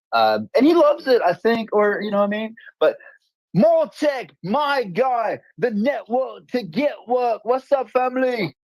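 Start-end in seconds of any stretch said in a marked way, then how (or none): 2.8-8.5 very bad put-on English accent, higher pitch. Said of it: "very terrible, um, uh, im-, impression of my English accent".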